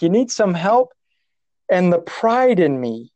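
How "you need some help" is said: mock, high-pitched, hollered, yelled-back delivery. Retelling a boogie boarder's reply: imitating someone yelling. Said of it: "he yelled back".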